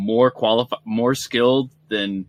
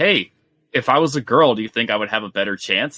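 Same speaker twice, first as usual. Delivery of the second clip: ordinary delivery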